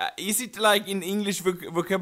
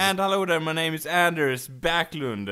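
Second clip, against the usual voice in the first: ordinary talk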